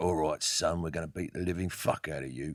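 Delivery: put-on British tough-guy accent. Showing the kind of tough roles british actors can play: put-on tough british accent. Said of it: "they can be real tough for that".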